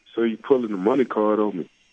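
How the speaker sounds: normal talking voice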